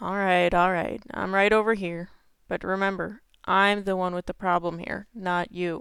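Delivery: relenting, conceding, giving-in tone. Retelling giving in to Mom: quoting himself quietly. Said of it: "real quiet like".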